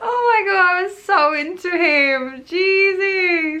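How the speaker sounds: giggling while talking. Talking about a crush, giggling while talking. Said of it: "I'm saying this with the smile on my face".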